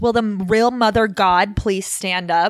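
dripping with sass, acted out. Retelling how a man leaned into the camera: imitating a sassy line. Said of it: "he says it with such sass".

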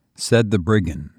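ordinary delivery, nothing marked

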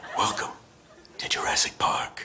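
breathy near-whisper, breathed out. Auditioning in a Jurassic Park screen-test skit: Clint Eastwood impression. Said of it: "Clint Eastwood, take one".

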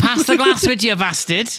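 very high, swooping, put-on Scouse accent. Teasing the other speaker about how they say glass: put-on Scouse accent. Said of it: "I'm not fucking Scouse, mate".

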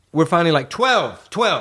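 rising exasperated rant.

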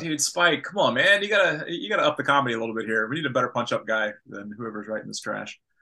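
ordinary talk

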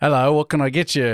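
awful, overdone, fake Australian accent. Retelling a creator's video skit about ordering a McFlurry, terrible Australian accent. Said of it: "This is my terrible Australian accent".

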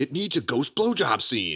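insistent tone with pitch swinging around. Retelling a movie story, the speaker acts out Dan Aykroyd screaming. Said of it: "Aykroyd just kept screaming".

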